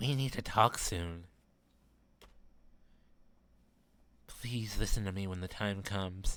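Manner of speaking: confiding, secretive whisper. Voicing Raspberry asking you to listen later: very quiet whisper. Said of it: "Raspberry whispers so quietly you lean over".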